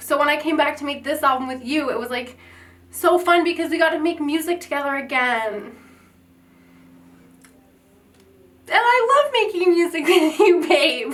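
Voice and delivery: voice on the edge of tears. Telling a partner how fun it was to make music together: about to cry. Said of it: "are you gonna cry?".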